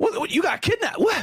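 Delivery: high, yelping shocked disbelief.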